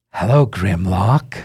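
loud, carrying voice calling out. Voicing a hidden voice calling from around the corner: unseen voice calling out. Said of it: "you hear a voice go".

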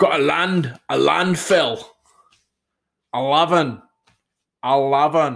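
Scottish accent. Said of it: "That would be about as Scottish as I can do".

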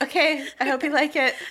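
put-on exhausted voice. Imitating Bobby at the end of a remodel: imitating an exhausted Bobby. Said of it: "exhausted and his eyes twitching".

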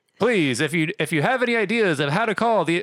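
mock radio announcer voice.

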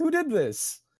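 very high-pitched character voice. Voicing Barthen finding his door knocked in: voicing Barthen. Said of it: "he runs up to the house and he goes".

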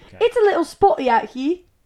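slow, high fake British accent drifting into Australian. Taking a turn in an accent game, saying the set sentence: put-on british accent sounding australian. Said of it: "That sounds Australian".

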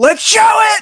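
high, loud, excited screaming. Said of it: "screamed it".

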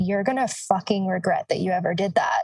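put-on ice-cold, menacing tone. Retelling his reply after being screamed at, mimicking an ice-cold threat. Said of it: "he like turned ice cold and like looked at me and he was like".

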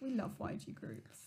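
dry, sarcastic whisper as an aside. Admitting you hardly know anything about the group being discussed, sarcastic. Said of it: "That sounds so sarcastic".

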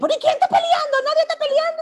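imitated woman, angry and argumentative. Retelling how a quarreling woman answers when told not to fight: imitating a woman arguing angrily. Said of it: ""Espérate, no pelees"".

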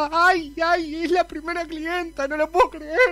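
emotional, about to cry. A character receiving her very first client, about to cry. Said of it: "voy a llorar".

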